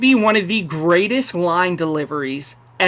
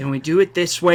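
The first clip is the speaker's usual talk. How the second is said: mock-calm, quiet, hushed, forced calm voice; 6 semitones higher, 5 dB louder than usual. Retelling a man losing it, acting out his words: retelling quiet forced calm. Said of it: "he's talking really quietly".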